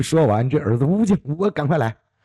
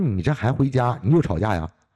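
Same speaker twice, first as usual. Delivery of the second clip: normal talking voice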